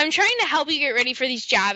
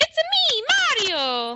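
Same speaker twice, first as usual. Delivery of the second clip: happy cartoon voice, much higher; 12 semitones higher than usual. Showing how Mario should sound after a Wario attempt, happy Mario impression. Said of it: "Mario is happy".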